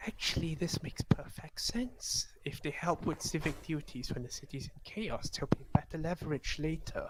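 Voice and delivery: hushed, very soft, very quiet whisper. Voicing a character who speaks privately to a player: whispering. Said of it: "Tia whispers to you".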